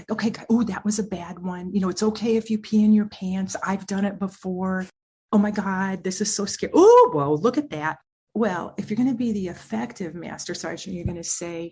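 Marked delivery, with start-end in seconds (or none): 0.1-8.0 put-on timid, anxious, over-soothing voice, louder. Acting out an emotionally validating master sergeant: timid, over-soothing sergeant. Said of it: "you'd be talking like this".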